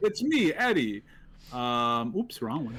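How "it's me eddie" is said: clumsy, high-pitched fake Italian accent. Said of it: "bad Italian accent multiverse".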